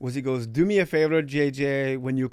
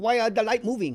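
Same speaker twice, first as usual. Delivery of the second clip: put-on pitched-up slow Polish accent; 8 semitones higher than usual. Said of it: "can I do his accent?".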